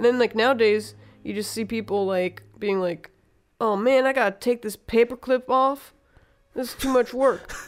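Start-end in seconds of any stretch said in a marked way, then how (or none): 3.6-7.5 put-on complaining voice. Imitating how people nowadays react to work, mocking people complaining. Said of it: "I say it in that type of voice".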